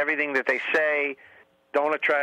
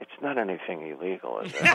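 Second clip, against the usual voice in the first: hushed, lowered, very low voice; 7 semitones lower, 3 dB quieter than usual. Retelling how the mother asks about an event, imitating her lowered voice. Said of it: "and then she lowers her voice".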